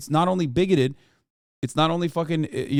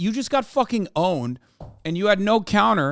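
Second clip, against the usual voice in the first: ordinary talk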